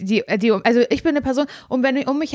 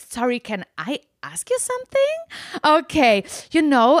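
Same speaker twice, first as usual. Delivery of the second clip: mannered, artificial, swooping put-on way of talking; 4 semitones higher than usual. Showing how she talks to cover missing vocabulary and grammar: affected, put-on way of speaking. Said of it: "deswegen rede ich so ganz aufgesetzt".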